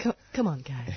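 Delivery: drawn-out slow delivery. Community radio host urges listeners to volunteer: real slow voice. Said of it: "just a real slow voice".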